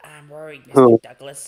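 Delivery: very loud, belted-out put-on character voice. Showing the others the best Toad voice. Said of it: "You know what's the best Toad voice?".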